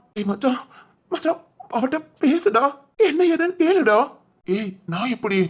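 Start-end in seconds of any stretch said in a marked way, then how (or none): 1.2-4.0 crying, high-pitched, tearful pleading voice. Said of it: "நடு ரோட்ல நின்னு அழுதுகிட்டு இருக்க".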